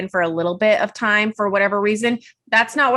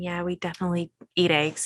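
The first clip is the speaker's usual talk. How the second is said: hushed, secretive half-whisper; 2 semitones lower, 7 dB quieter than usual. Retelling what clients said on the phone: imitating someone half-whispering. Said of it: "they all whisper into the phone going".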